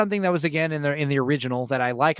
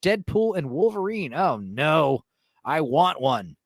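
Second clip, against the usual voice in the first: normal talking voice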